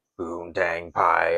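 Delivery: wild, crazy robotic wrestler-style voice. Retelling Kane's answer in the ring: Kane's crazy robot voice. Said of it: "the crazy robot voice at the time".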